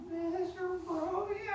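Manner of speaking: high, slow, unsure tone rising at the end.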